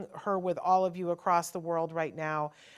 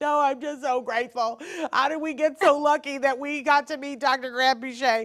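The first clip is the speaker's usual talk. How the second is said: put-on ugly sobbing, higher and louder; 8 semitones higher, 6 dB louder than usual. Retelling own words said while sobbing to a husband: retelling own ugly crying. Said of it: "I went to the whole ugly cry".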